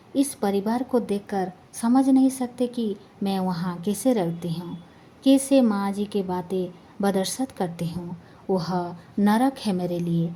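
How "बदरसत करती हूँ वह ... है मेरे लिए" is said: ordinary delivery, nothing marked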